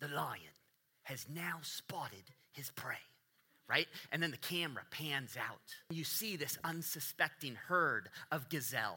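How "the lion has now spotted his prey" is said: put-on British wildlife nature-documentary narrator accent. Describing a wildlife documentary, narrating the scene in a British nature-documentary narrator accent. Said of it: "a man with a British accent begin to narrate".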